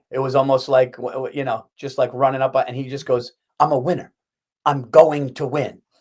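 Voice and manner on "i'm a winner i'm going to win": slow, arrogant, boastful delivery. Retelling a movie scene where Denzel talks trash: imitating Denzel Washington's arrogant boast. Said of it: "And he said it arrogantly".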